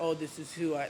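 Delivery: normal talking voice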